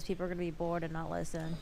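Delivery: low, dead level monotone with no lift anywhere. Explaining changing the cadence of your voice, flat monotone. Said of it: "If you talk monotone like this".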